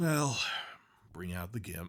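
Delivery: play-acted matter-of-fact, almost bored, fast and flat. Quoting how he says the line, matter-of-fact, almost bored. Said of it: "he says it matter of factly, almost bored".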